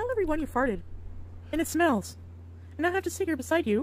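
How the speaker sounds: playful, high little talking cat voice. Woman in a holiday video speaking for her cat, in the cat's voice. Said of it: "is she pretending to be the cat's voice right now".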